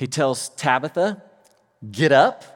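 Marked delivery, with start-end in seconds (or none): 1.9-2.6 get up punched much louder. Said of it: "Did you notice I tried to emphasize the word?".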